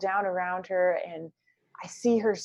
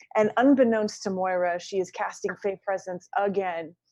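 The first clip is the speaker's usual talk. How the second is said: ordinary talk, nothing marked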